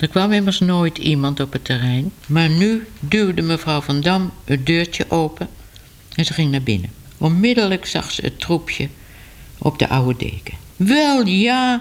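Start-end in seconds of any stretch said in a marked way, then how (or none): 10.8-11.8 high, revolted, disgusted outcry. Narrating a woman who finds kittens on the old blanket in her caravan, exclaiming in disgust. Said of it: "riep ze met een vies gezicht".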